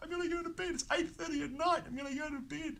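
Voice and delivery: put-on exuberant hysterical laughing, very high-pitched and giddy. Retelling getting into bed at night: retelling laughing in hysterics. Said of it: "in hysterics".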